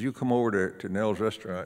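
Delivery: ordinary delivery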